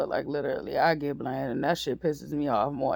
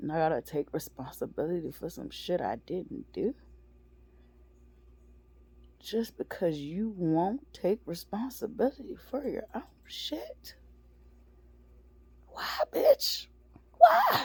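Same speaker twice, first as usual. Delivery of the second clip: furious, angry, swooping, rising pitch outburst; 4 semitones higher than usual. Venting about being blamed for something not done: angry and pissed off. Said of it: "really pissed off and angry right now".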